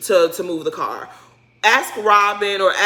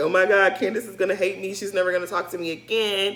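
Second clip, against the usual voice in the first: acted tearful crying voice, quieter; 4 dB quieter than usual. Retelling what Grace said after damaging the car: imitating someone crying. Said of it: "in her room crying her eyes out".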